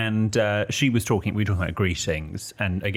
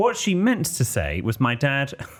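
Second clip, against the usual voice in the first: ordinary delivery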